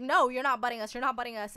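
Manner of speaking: mock angry, heated, insistent yell. Retelling how a young daughter yelled at a man who cut in line; retelling a yell. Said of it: "She's like yelling at this guy".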